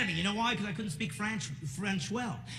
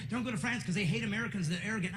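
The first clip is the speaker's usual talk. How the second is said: normal talking voice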